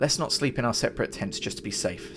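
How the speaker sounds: ordinary delivery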